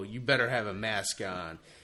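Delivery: ordinary talk, nothing marked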